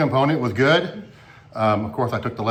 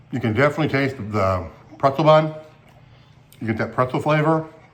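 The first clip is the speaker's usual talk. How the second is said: speaking mid-bite with mouth full of food. Speaker tastes a chicken sandwich and reviews it, talking while chewing. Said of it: "I'm still chewing".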